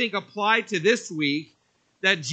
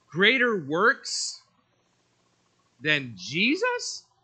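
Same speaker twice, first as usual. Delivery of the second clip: pitch lifting at the end on Jesus. Reading a title that ends with a question mark, rise on jesus. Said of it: "You can even have your voice go up like that if you want for effect".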